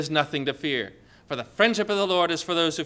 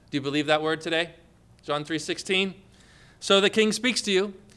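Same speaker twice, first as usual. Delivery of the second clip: normal talking voice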